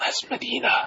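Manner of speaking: hushed whisper. Saying a joke remark to the other speakers: whispering. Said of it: "He has to whisper it".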